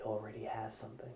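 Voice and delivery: very quiet, close-up half-whisper. Leaning in to someone's ear, she speaks before walking off: half-whispering. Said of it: "And she whispers".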